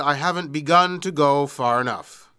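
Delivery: ordinary talk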